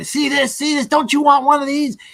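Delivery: put-on high-pitched, taunting drunk man voice. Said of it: "he's like".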